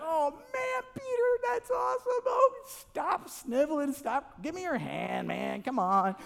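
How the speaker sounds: high, far-off laughing voice.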